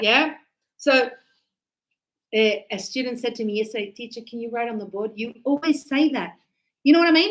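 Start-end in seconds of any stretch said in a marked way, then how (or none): none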